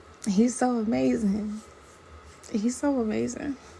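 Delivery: voice tearing up with emotion, teary. Speaker telling y'all a personal story, tearing up. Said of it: "I'm tearing up literally as I'm telling y'all this".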